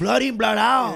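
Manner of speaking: put-on Latin American accent.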